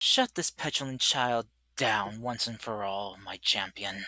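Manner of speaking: very quiet, close, soft half-whisper. Narrator voices Zalafay speaking to the listener, her champion: Zalafay half-whispering in your ear. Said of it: "just whispering in your ear".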